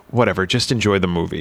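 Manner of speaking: normal talking voice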